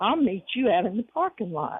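put-on aggressive tone. Retelling what a man said to a Walmart employee: imitating an aggressive tone. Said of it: "in a very aggressive tone".

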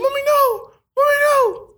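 put-on childlike pleading, very high pitched. Retelling begging his mom not to leave: imitating childhood begging. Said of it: "and I'm begging her".

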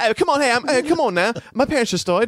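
put-on high-pitched, upset voice with an English accent. Acting out a scene after a remark on the accent slipping: Amadeus English accent. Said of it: "his English accent drops for a second".

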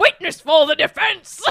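very loud, booming, forceful shout. Noting the line isn't said quietly, loud Michael Gambon Dumbledore. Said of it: "Because he doesn't say it in a quiet voice. Like".

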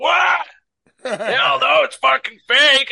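raspy, shrill, very high, very loud drawn-out yell. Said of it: "he's got a deep, raspy voice".

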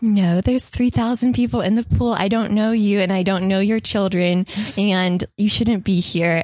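ordinary delivery

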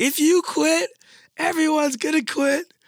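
very high, shrill, high-pitched shouting voice. Retelling what she said while shouting at the speaker for quitting, imitating her shouting. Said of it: "She's shouting at me".

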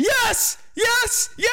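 very high, thrilled, excited shrieking scream. Reading out own notes on a story moment into a mic, screaming excitedly. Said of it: "Sorry if I'm screaming".

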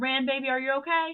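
high voice calling out across a room. Calling across a room to a child in danger: yelling across the room. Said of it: "I'm still gonna yell across the room".

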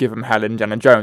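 plain

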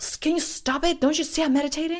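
high, loud, fast, angry yelling. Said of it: "he starts yelling".

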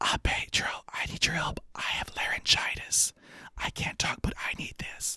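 soft, breathy, pleading whisper. Retelling asking pedro for help while faking laryngitis: imitating own past whisper. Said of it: "I'm just gonna whisper".

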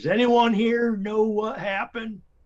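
very high, loud yelling shout. Calling out in character to a crowd in town: yelling. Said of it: "I just yell".

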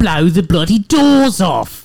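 very loud, high-pitched shout at full volume. Michael Caine's name has just come up in conversation; answer with a loud Michael Caine impression. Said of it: "That was very loud".

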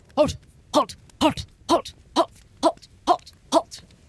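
each repeated word barked high like a dog. Narrating a scene where a larger dog stands there barking: barking dog voice. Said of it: "he is barking, and he's saying".

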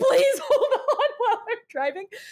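very high, loud, crying, pleading voice. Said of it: "crying and trying to be like".

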